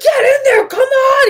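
shrill, very high, loud screaming. Retelling a TV episode scene, imitating Cody screaming. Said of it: "screaming at him".

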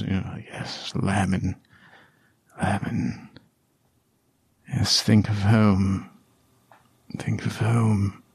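barely audible, soft, faint whisper. Narrator voicing a half-conscious man murmuring to Lamin, whispering. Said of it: "as he kind of whispers".

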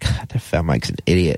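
normal talking voice

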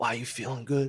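low, hushed, quiet voice. Retelling what the devil said on the phone: imitating someone talking real low. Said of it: "On the phone, like, talking real low".

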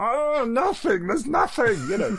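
very high, slow, stretched-out squeaky comic voice. Explaining the reaction he wants from listeners, Muppet-like voice. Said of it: "Sorry, I sounded like a Muppet then".

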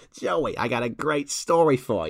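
put-on 1950s American newsman reporter voice. A podcast host tries out the voice just mentioned, in a 1950s American reporter voice. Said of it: "Should I just do it in that voice?".

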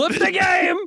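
high, mock yelling. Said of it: "stop yelling".

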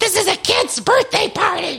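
put-on woman's shout. Describing a trailer where a background woman shouts at a kid's party: imitating a woman shouting. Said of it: "she's shouting".

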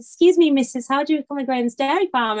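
silly, ridiculous, high, joking put-on voice. Retelling asking a stranger a joking question: imitating own ridiculous quiet voice. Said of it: "I said it really quietly, but joking".

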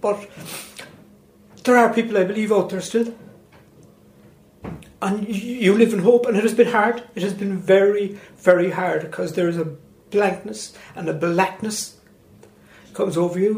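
emotional, moved, emotion building through the words. Answering a question about justice and hope, getting a little emotional. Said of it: "I'm getting a little bit emotional".

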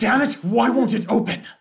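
very loud, high-pitched, exasperated, frustrated yelling. Voicing an unseen figure at the scorched center: frustrated yelling. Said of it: "frustrated yelling".

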